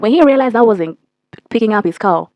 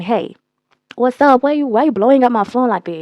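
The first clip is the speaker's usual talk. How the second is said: ordinary talk, nothing marked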